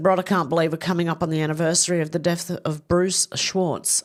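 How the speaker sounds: normal talking voice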